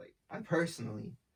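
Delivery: stress on personally. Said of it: "emphasis on personally".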